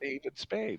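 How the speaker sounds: soft, hushed whisper, said aside. Retelling what a sister-in-law said at another table: imitating a whisper. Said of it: "She's whispering this".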